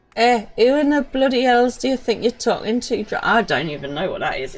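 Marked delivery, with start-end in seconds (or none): 0.2-3.1 poorly done attempt at Scottish accent. Voicing a pirate line, attempting a Scottish accent. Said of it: "It's definitely not Scottish".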